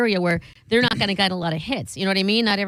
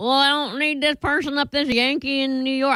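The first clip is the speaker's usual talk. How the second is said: horrible put-on Iowa accent, high and slow; 6 semitones higher than usual. Imitating local sellers turning down a New York buyer: horrible Iowa accent. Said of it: "that's a horrible Iowa na-, accent".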